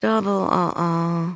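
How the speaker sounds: low muttered mumble, "uh-oh" drawn out. [name] reacts as Dad explains the aquarium sleepover, mumbled. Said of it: "[name] mumbled".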